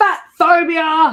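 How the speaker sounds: sudden, high, loud yelled outburst. Retelling a woman's reaction to her doctor's advice, retelling a yell. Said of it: "Sorry for yelling".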